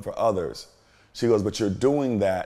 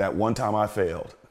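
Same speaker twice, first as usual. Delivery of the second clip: ordinary delivery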